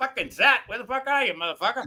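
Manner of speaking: play-acted irritated swearing. Telling the others how Nikki reacted to Zach's lateness: imitating Nikki, mock-perturbed. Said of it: "She was starting to get almost perturbed".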